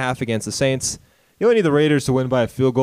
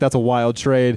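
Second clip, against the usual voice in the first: plain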